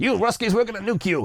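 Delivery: put-on brash, heavily laid-on American accent. Comparing national stereotypes, the speaker is imitating Americans. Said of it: "the Americans like".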